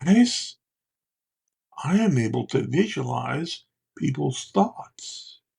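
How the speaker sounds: loud, drawn-out theatrical whisper. Speaker retells leaning in to tell the guys a secret, in a loud whisper. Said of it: "I would whisper in a loud voice".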